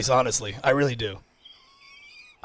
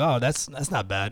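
ordinary talk

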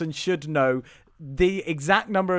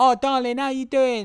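put-on very strong Essex accent, pitched up; 8 semitones higher than usual. Imitating the women in a show being discussed: strong Essex accent. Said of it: "they've all got very strong Essex accents".

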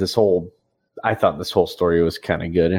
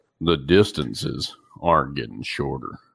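deep, low, manly man's voice; 5 semitones lower, 3 dB quieter than usual. Showing the guy you picture talking, in a Sam Elliott voice. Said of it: "I picture a guy talking like this, like Sam Elliott".

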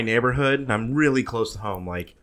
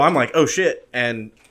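ordinary talk

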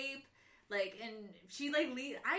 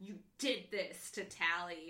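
put-on voice through gritted teeth; 4 semitones lower than usual. Retelling a scene, voicing a bleeding character confronting tally: acting out gritted teeth. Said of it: "through gritted teeth".

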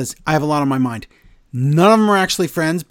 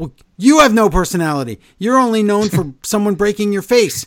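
fast, pitched-up, fake-angry rattled-off talk; 5 semitones higher than usual. Recounting an argument before a crowd, speaker voices Zoe's reply to Becky: Zoe's fake-angry fast talk. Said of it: "starts talking really fast and pretend angry".

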